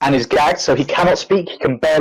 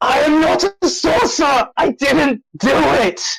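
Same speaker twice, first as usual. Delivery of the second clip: shrill, very high, croakiest yell; 11 semitones higher than usual. Game narrator voicing a boy whose mask was pulled off, yelling croakily. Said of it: "yells out in the most croakiest voice".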